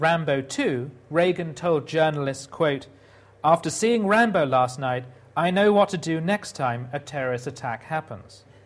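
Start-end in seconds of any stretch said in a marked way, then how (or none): none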